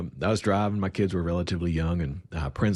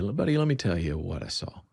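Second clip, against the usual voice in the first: ordinary talk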